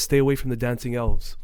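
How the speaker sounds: ordinary delivery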